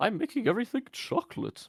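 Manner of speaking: very high, swooping character voice. Joking with the others about Willy Wonka: Willy Wonka impression. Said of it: "That's my Willy Wonka impression".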